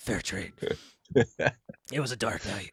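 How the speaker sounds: gravelly noir-movie voice. Discussing a noir movie, showing how everyone talks in it, deep gravelly noir voice. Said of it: "you have to have a deep gravelly".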